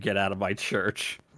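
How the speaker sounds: ordinary talk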